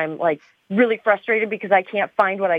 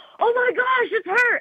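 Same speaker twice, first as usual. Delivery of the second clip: mock very high, thrilled, excited shriek. Speaker retells a man in a cafe recognizing her, retelling a scream. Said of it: "he screamed it".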